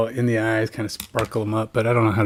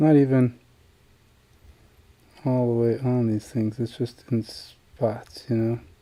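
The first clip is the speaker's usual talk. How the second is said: quiet, subdued, low-key speech; 4 dB quieter than usual. Painting a figure while concentrating, talking quiet and subdued. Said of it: "my statements are very quiet and subdued".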